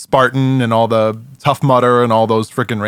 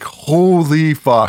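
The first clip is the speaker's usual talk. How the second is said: pitched-up scream with the word Holy stretched; 5 semitones higher than usual. Retelling a medical exam with a camera, re-enacting his scream. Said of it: "I was literally screaming like".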